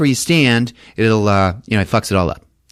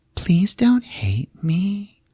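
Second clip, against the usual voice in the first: put-on child's voice, higher and quieter; 8 semitones higher, 4 dB quieter than usual. Retelling a séance where a woman speaks as a child: imitating a child's voice. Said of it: "comes the voice of a child".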